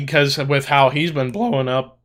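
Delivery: voice breaking mid-word. On a podcast, talking about a friend, voice cracking. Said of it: "my voice cracked horribly".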